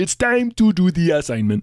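cartoon frog puppet character voice. Retelling how Jim did a voice in class: Kermit the Frog voice. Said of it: "It's a solid voice".

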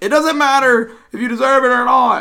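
very high-pitched, very loud ranting yell. Quoting a yelling TV commentator, sounding like Bill Clinton. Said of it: "tried to sound like Bill Clinton".

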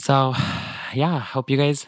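gloomy, deflated, sad, downcast tone. Signing off a podcast episode to listeners, sounding sad. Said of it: "Why do I sound like so sad?".

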